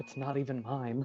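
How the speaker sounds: muttered under breath. Retelling what a man did after starting to say something, retelling a mutter under breath. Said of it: "mutters under his breath like".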